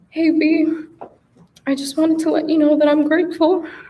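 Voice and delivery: unsteady, quivering, shaking, trembling voice. Speaking directly to a best friend during a tribute speech, voice shaking. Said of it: "I'm shaking, if you couldn't tell".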